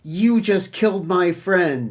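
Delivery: angry tone. Voicing Khazra speaking down to the standard bearer after losing her horse: angry. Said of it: "now Khazra is pissed".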